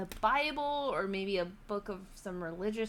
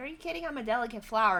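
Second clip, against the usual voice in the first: put-on sassy voice, much higher pitch; 2 semitones higher than usual. Retelling teasing her coworker, quoting her own sassy retort to him. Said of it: "as I was being sassy with him".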